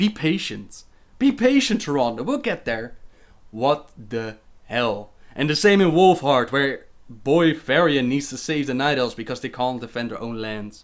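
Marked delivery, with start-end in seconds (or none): 0.0-3.0 condescending, patronizing tone. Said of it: "who tells Taronda".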